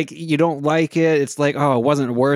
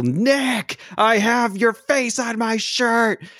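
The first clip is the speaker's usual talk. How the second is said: play-acted, bold, slow, high-pitched yell; 8 semitones higher than usual. Retelling a fan in the back yelling at a celebrity: imitating someone yelling. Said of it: "to have the balls to just yell".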